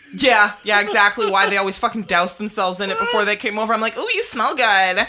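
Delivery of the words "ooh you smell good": put-on youthful, high teenage boy voice. Retelling own past words to friends who came over: imitating own teenage voice. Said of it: "the teenage voice".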